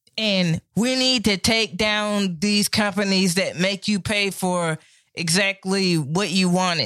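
put-on drunk voice. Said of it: "I'm gonna do it like how a drunk person would".

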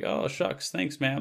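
super sweet, high-pitched voice with a creak. Retelling a fan's video call, imitating Brendan Fraser being super sweet. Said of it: "being super sweet to her".

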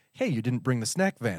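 soft, quiet murmur under the breath. Retelling what a friend said leaning out his door: imitating someone speaking quietly. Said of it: "quietly says".

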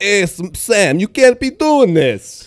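put-on New Jersey accent. Discussing a movie's accents, quoting a line: Jersey accent. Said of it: "I do not hear many Jersey accents that are like".

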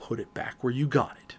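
dropped, low, hushed voice, near whisper. Retelling telling his wife to put an item back on the shelf, lowered voice. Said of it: "I lowered my voice".

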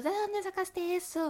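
mock shouting, high-pitched. Retelling a party story, imitating someone yelling a question. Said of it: "le pregunta a los gritos".

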